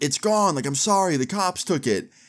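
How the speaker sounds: mock light call, high, as if through door. Retelling answering through a locked glass door: imitating own past yelling. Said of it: "And I yell back through the door".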